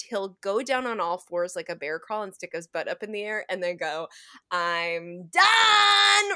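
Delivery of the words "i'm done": very high, loud yell with drawn-out "I'm". Retelling how a child calls out from the bathroom: imitating a loud shout. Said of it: "really loud in the bathroom".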